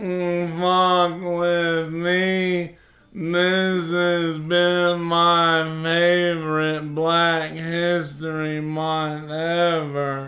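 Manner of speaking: very slow, unhurried, drawn out, stretching "me". Repeating the impression when asked to do it again: Michael Lair impression. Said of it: "Can you do that again?".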